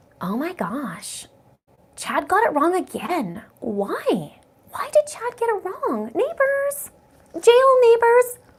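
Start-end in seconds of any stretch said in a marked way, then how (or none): 0.2-6.1 put-on swooping Valley Girl voice, "why" stretched long. Act out how she might react when she wakes up on the twenty-third, in a Valley Girl voice. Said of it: "Adrian says Valley Girl voice".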